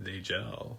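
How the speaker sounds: very quiet, dry, sarcastic mutter under the breath. Retelling a movie scene where Margot mutters: imitating Margot's sarcastic mutter. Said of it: "Margot kinda under her breath".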